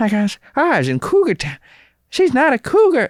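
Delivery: weird, high, swooping, sing-song comic voice. Recalling an old stand-up bit, doing a weird Sean Giambrone voice. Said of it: "I was doing like a weird like Sean Jambroni kind of voice".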